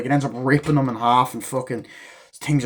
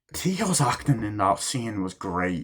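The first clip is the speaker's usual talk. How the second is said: plain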